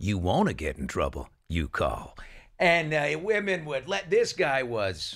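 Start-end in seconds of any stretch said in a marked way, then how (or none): 0.0-2.2 put-on Mississippi accent, lower and quieter. Retelling a pickup line a father-in-law used, imitating a Mississippi drawl. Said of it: "he was a big Mississippi boy".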